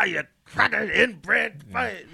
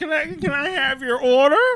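fake drunk, higher, louder, slower; 9 semitones higher, 3 dB louder than usual. Retelling how a waitress stayed in character while taking orders, fake drunk voice. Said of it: "doing this little fake drunk thing".

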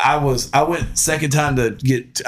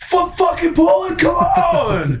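put-on yelling, higher. Retelling how a voice from the background yelled to keep pulling: imitating someone yelling. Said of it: "he's still yelling at me".

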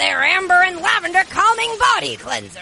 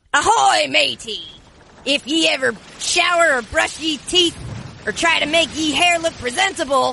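swashbuckling pirate voice, ahoy-matey style; 3 semitones lower than usual. Asked to do it like a pirate, speaker performs: pirate voice. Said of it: "I want you to do it like a pirate".

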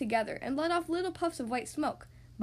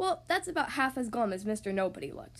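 plain reading voice

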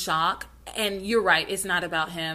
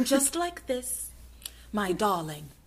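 put-on soft, old Hollywood transatlantic film accent; 6 dB quieter than usual. Showing how actors had to speak once talkies began, Cary Grant transatlantic accent. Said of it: "that Cary Grant transatlantic kind of like".

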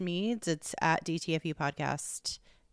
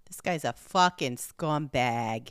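put-on Rhode Island accent, lower; 4 semitones lower than usual. Answering a call for listeners from Rhode Island: attempted Rhode Island accent. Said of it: "That wasn't very Rhode Island-y".

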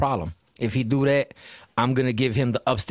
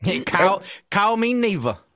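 put-on Southern accent, higher pitch; 8 semitones higher than usual. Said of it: "that accent is so Southern".

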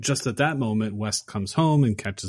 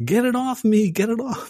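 mock screaming, much higher; 13 semitones higher than usual. Speaker retells a movie scene, imitating Herbert screaming. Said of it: "you hear Herbert screaming".

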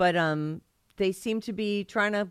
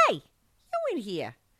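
put-on slow, drawn-out two-year-old toddler voice; 4 dB quieter than usual. Retelling what a two-year-old said on waking: imitating Julie as a toddler. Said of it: "she's two years old, and she goes".

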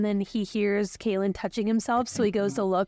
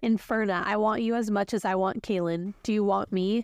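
ordinary delivery, nothing marked

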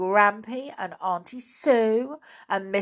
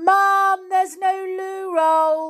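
very high, loud, drawn-out shout; 11 semitones higher, 6 dB louder than usual. The narrator, out of loo roll in the bathroom, calls to mum: shouting. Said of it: "I had to shout".

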